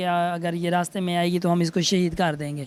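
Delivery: plain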